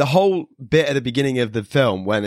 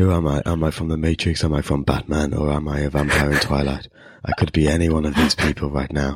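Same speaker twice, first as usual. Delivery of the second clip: mock-somber, put-on serious monotone, much lower; 9 semitones lower than usual. Parodying a movie character's seriousness, mock-somber monotone. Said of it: "the same sort of monotone".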